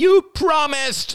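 shrieked, very high scream. Narrating a son held by the wrist by his father, screamed. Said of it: "screamed Ben".

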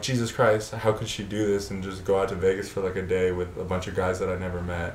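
ordinary delivery

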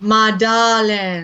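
put-on accent of the American South. Imitating Alex Cord's accent as Doctor Sam Marlowe: Sam Marlowe plantation-owner accent. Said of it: "Alex Cord's accent as Doctor Sam Marlowe".

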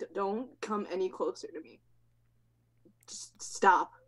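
frightened, panicked begging with stammering. Playing a cornered character who points a knife at a creature: panicked plea. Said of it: "too much of a panic".

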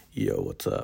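put-on deep, low, raspy voice. Trying out the voice the speaker puts on at this school: deep low raspy voice. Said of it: "a deep, low voice rasp".

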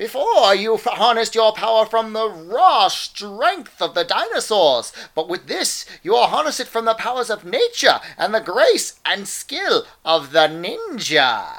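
high swooping cartoon hero voice. Quoting the character Ninja from Power Rangers: Dudley Do-Right voice. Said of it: "With his Dudley Do-Right voice".

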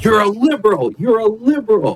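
mock, very high-pitched, accusing yelling. Retelling a political ad where a candidate cut someone off: imitating George Bush yelling. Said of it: "started yelling".

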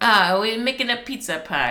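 put-on Italian accent. Recalling a scene, the speaker quotes what a man said: Italian accent. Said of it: "it was the Italian accent".

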